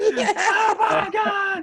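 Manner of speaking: excited screaming. Retelling watching the hero appear, imitating own excited screaming. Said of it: "I was screaming, yelling".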